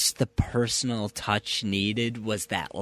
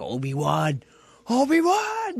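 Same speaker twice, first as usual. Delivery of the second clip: very high, wild, swooping scream; 13 semitones higher, 3 dB louder than usual. Retelling a scene where a character walks away: imitating a scream. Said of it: "he's screaming at him".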